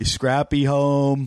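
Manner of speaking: put-on imitation of a kid's voice. Retelling how a kid came asking at the door: imitating John. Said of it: "My mom used to do an impression of him".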